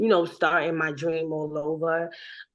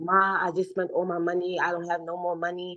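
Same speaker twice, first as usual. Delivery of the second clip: re-enacted tearful voice. Speaker recalls calling their mom, jobless and out of money, retelling crying to mom. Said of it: "I called my mom crying like".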